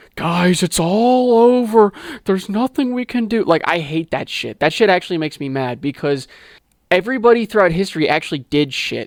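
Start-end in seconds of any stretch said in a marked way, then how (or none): 0.1-3.4 worked-up, pitched-up ranting and raving. Mocking people who give up, imitating someone ranting and raving. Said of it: "Ranting and raving and being like".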